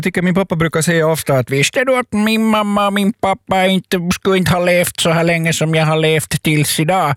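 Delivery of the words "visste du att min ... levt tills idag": put-on Swedish spoken with a Finnish accent. Quoting what their Finnish-speaking dad often says: imitating dad's Finnish accent. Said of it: "när du imiterar din finskspråkiga pappa".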